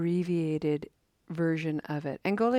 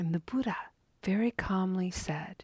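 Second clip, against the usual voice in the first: ordinary talk, nothing marked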